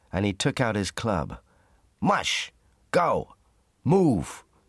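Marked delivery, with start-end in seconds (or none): 2.0-4.4 high-pitched yelled shouting. Hal orders his dogs to pull the heavy sledge, shouting. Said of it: "he shouted to the dogs".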